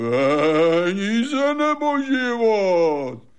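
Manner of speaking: very high, full-throated roar with "Peníze" drawn out. A father tells his son how he robbed people, retelling a roar. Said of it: "že jsem nejdřív zařval".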